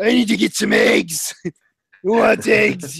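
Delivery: rough, creaky, grating, comical voice, pitched a bit up. Imagining Rorschach asking about eggs in his everyday voice. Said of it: "that's his everyday voice".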